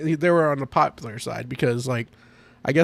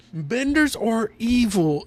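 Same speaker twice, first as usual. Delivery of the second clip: put-on, high-pitched ranting yell; 8 semitones higher than usual. Retelling an episode where a guy on a podium yells: imitating a man yelling. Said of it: "the podium yelling".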